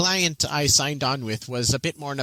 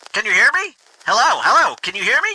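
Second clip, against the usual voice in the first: very loud put-on gnome voice; 9 semitones higher, 7 dB louder than usual. A narrator voices a gnome calling through a horn, in a very loud gnome voice. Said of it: "In a very loud gnome voice".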